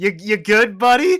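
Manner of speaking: loud, high-pitched yell. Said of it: "I yell back".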